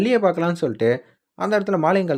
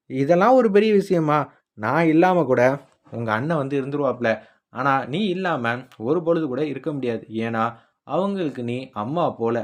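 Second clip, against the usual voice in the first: normal talking voice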